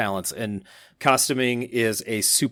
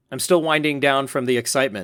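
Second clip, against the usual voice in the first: usual speaking voice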